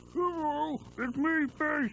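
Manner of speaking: words pushed out of one side of the mouth. Children's show segment showing ways to talk: talking out of the side of the mouth. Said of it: "Talking out of the side of your mouth".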